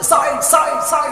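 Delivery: loud, high calling out.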